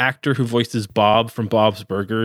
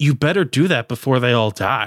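put-on flat deadpan tone; 2 semitones higher than usual. Retelling what a woman said to the speaker, imitating her deadpan delivery. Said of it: "she just like deadpan says".

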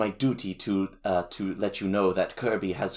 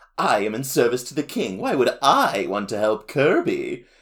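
acted smug, playful sing-song teasing tone; 4 semitones higher, 4 dB louder than usual. Retelling a character's reply when questioned, in a mock smug, playful tone. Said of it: "in like this smug, playful like tone".

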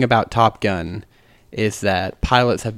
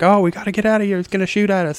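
mock, very high scream; 10 semitones higher than usual. Retelling a movie's final fight scene: imitating Merlin screaming. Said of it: "Merlin's screaming at him, like".

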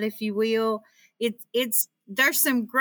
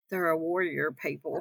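put-on under-breath muttering, lower and quieter; 5 semitones lower, 7 dB quieter than usual. Retelling a remark someone at the table made: imitating muttering under breath. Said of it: "say under his breath".

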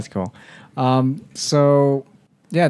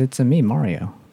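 ordinary talk, nothing marked

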